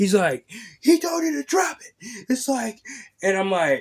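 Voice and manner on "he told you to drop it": put-on, high, shrill screaming yell. Retelling how a man got right in the speaker's face, imitating someone screaming. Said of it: "He's screaming in my face".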